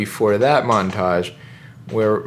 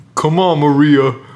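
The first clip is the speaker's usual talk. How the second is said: loud, bad, failed put-on Soviet accent; 4 semitones higher, 5 dB louder than usual. Retelling a funeral scene, play the Soviet guy calling Maria away in a bad Soviet accent. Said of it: "I can't do a Soviet accent".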